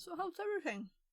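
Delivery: talking with mouth full. Snacking during a conversation, talking with food in mouth. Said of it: "Sorry for talking with food in my mouth".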